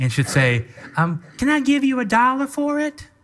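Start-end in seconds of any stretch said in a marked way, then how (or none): 1.4-3.1 very high, sweet Southern belle voice. Retelling a Christmas morning, the speaker imitates Courtney as a Southern belle. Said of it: "it's always a Southern bell".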